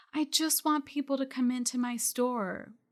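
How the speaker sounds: whining, put-upon, really whiny complaining voice. Quoting a retailer who fears going live on social media, in a mock-whiny voice. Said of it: "in a really whiny voice".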